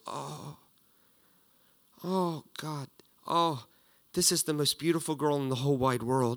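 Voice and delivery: moved, overwhelmed, halting gush, emotion spilling over. Acting out a dad holding his baby girl: imitating a deeply moved dad. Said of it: "he can't contain himself hardly".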